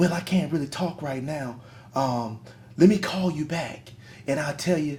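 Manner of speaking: hushed stage half-whisper. Retelling what an office worker said on the phone: imitating someone half-whispering. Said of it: "she would be whispering on the phone".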